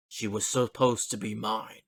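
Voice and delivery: strange, weird voice, echoing and ringing. Narrating to the players a voice that echoes through the town: weird echoing voice. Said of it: "you hear a weird voice echoing throughout the town".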